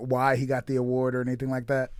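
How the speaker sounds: ordinary talk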